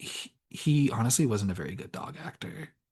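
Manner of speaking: soft, hushed, quiet whisper. Retelling what a wife said after the movie: imitating someone whispering. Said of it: "my wife literally just goes and whispers".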